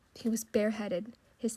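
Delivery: plain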